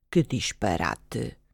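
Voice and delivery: very low, hushed murmur under the breath. Narrator reads the raindrop left behind by the trout, muttering. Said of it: "Murmurou ele".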